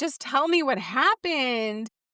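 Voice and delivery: talking mid-laugh, laughing through the words. Speaker recapping a show scene with a female character, imitating laughing speech. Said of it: "she was laughing and saying".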